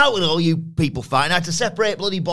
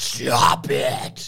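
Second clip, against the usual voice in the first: gritty, rough, creaky, rasping pro-wrestler voice; 5 semitones lower than usual. Answering how the boss would sound: Triple H impression. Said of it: "He'd be like".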